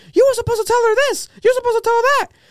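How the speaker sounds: very high, heated arguing yell. Speaker retells a man arguing with some women outside, retelling a man's yelling. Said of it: "yelling at them".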